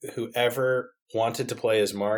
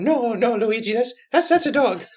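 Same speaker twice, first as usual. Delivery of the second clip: very high cartoon voice, stumbling on "that's"; 12 semitones higher, 4 dB louder than usual. Retelling a toy video where Mario answers Luigi: Mario voice. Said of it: "And Mario will go".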